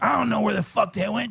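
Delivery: vicious, cutting, high-pitched rasping delivery. Retelling what a girlfriend snapped about the missing teeth: imitating a vicious girlfriend. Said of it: "she sounds vicious".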